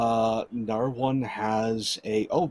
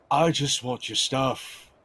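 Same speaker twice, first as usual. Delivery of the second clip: very curt, terse, blunt, short delivery; 2 semitones higher than usual. Voicing a thug with a long sword demanding loot: very curt voice. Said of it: "one of them in a very curt voice".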